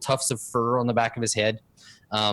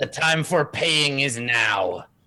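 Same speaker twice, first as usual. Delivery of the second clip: scornful, sneering goblin-like voice. Voicing a kobold who blocks the road, sneering kobold voice. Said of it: "sneers up at you".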